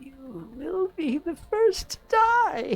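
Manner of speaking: very high woman's voice. Voicing the lady, freed from the web, as she turns to a player: voicing the lady. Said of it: "and she says".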